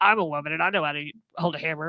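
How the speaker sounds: put-on man's voice. Quoting people who came at her, in a deep man voice. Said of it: "I had to do the man voice".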